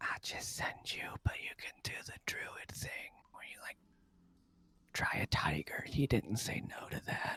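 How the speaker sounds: whispered, in a character voice. Voicing a character leaning over to whisper to another: whispering in character. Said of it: "and he whispers".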